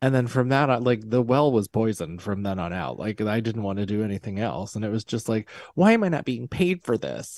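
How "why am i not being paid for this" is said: put-on high, swooping, indignant thirteen-year-old outrage. Retelling own reaction at thirteen: imitating indignant thirteen-year-old self. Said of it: "like an indignant thirteen-year-old".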